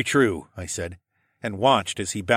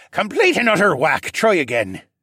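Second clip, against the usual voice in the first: sharp, swooping, cutting tone; 10 semitones higher, 6 dB louder than usual. The zany captain answers Rylan, said sharply. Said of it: "he said sharply".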